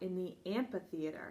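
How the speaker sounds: plain reading voice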